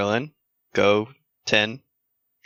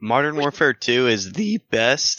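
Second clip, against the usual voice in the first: voice breaking and cracking, drawn out; 3 semitones higher than usual. Naming the best game in a chat, voice cracking. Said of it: "my voice is cracked".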